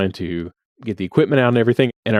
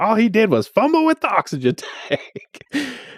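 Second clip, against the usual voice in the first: imitated angry yell, higher; 12 semitones higher than usual. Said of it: "she was just raging, yelling".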